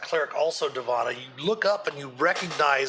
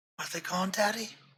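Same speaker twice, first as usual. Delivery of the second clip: put-on faint whispering child's voice, quieter; 4 semitones higher, 6 dB quieter than usual. Narrating a scene to the players, voicing a faint whispering child's voice. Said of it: "faint voice ... whispering ... a child's voice".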